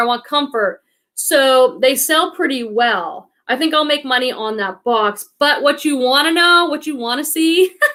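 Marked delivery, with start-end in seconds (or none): none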